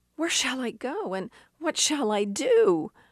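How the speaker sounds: terrified, desperate pleading. Retelling a movie scene where she answers him, retelling a terrified plea. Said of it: "with terror in her voice".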